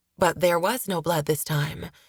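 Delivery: ordinary delivery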